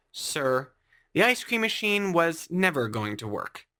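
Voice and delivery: ordinary talk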